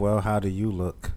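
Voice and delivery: ordinary talk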